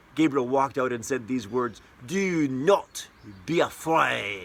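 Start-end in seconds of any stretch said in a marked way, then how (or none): 2.1-4.5 put-on French accent with every word stretched out very slowly. Retelling the pastor's line as the angel Gabriel: Gabriel's French accent. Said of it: "he used this French accent".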